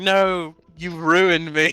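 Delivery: play-acted, outraged, furious high yell, drawn out. Retelling yelling at someone who cost them gold in a game: retelling furious yelling. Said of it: "I'm yelling at him like he's the bad guy".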